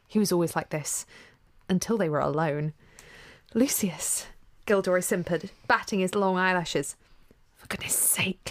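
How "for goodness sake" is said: hissing and quieter. Narrator voicing a man leaning in toward his companion, hissing. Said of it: "Lucius hissed".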